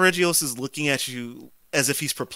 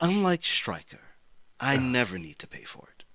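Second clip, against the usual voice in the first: completely deadpan, bone-dry delivery; 3 dB quieter than usual. Speaker telling a story, quoting what a man said to the listener: retelling a deadpan line. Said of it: "he goes complete deadpan and goes".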